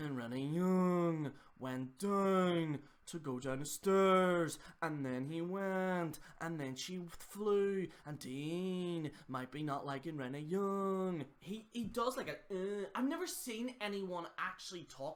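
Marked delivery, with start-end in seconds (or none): 0.0-11.2 rambling fart-like voice, long drawn-out Dean. Imitating how a YouTuber talks in all his videos: imitating a YouTuber's voice. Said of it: "he talks like this".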